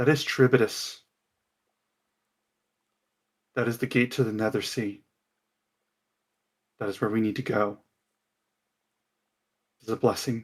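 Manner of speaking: soft, calm, stern, almost instructive tone. Voicing Chandra, who points out the gate to the Nether Sea: calm, stern, almost instructive voice. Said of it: "in this calm, stern voice, almost instructive".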